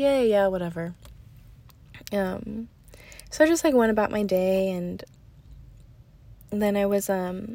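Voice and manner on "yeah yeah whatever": plain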